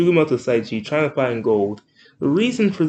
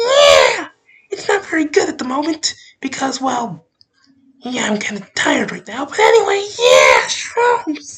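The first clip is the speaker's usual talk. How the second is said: grating, very high, loud, shrill, swooping sing-song cartoon voice; 11 semitones higher, 5 dB louder than usual. Speaker demonstrates the voice he might use for a whole video; Toad voice. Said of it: "speaking in a Toad voice, which sounds like this".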